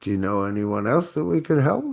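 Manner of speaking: rising inflection lifting help upward. Teaching tonality so a line sounds like a question, rise on final help. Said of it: "At the very end, you raise your inflection so it sounds like a question".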